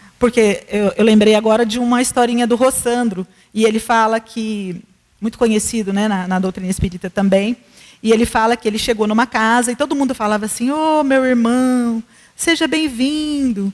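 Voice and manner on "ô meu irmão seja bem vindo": put-on honeyed sweetness, drawn-out and very slow. Speaker retells how everyone at a house greeted a newcomer, imitating a syrupy sweet voice. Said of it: "a voz melosa".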